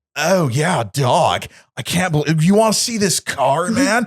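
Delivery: goofy anime-hero voice. Retelling what a man with a cool car said, in a stupid anime hero voice. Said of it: "my stupid uh, anime like hero voice".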